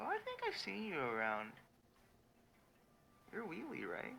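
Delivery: very high, timid, meek little voice. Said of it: "very meek".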